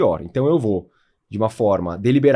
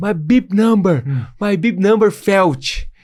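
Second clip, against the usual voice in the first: high, drawn-out yelling; 8 semitones higher, 4 dB louder than usual. Retelling calling out to a clapping volunteer near the finish: retelling own shout. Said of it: "Aí eu gritando".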